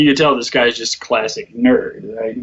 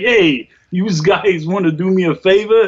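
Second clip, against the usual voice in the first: put-on drawn-out, slow, high mobster accent; 8 semitones higher than usual. Quoting a character who talks like Tony Soprano, in Tony Soprano impression. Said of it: "Who talks like Tony Soprano".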